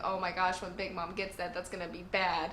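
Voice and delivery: plain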